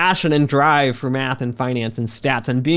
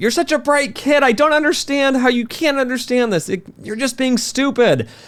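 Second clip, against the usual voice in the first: put-on yelling, higher pitch; 11 semitones higher than usual. Retelling an argument at a whiteboard with a colleague: imitating a colleague yelling. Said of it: "And he's yelling at me".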